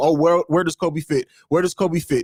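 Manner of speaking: ordinary talk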